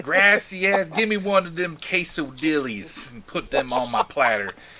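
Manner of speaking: put-on Texan accent on Spanish. Speaker shows the Spanish they picked up living in Texas, Texan-accented Spanish. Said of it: "the Texan version of Spanish".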